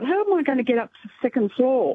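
normal talking voice

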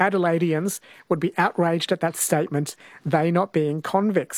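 ordinary delivery

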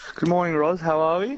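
audible smile, bright, pitched way up. Returning a greeting in the morning, speaking with a smiling voice. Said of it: "I can hear the smile in your voice".

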